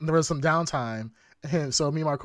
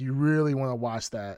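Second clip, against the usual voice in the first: usual speaking voice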